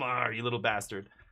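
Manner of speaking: put-on affectionate, smiling, teasing tone with laughter. Retelling teasing a dog that kept the ball, retelling an affectionate, laughing tease. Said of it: "in a good way, smiling, laughing".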